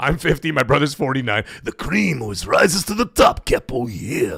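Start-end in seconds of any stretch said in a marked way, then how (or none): 1.6-4.4 deep, low smoker's voice, pitched way down. Doing a wrestler impression for the chat: Macho Man voice. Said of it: "I sound just like him".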